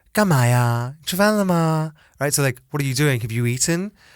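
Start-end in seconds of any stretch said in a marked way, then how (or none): 0.2-2.0 put-on high, dainty, girlish lilting voice. Recalling how the speaker's Shanghainese female colleagues talked, imitating dainty effeminate speech. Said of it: "dainty, effeminate way".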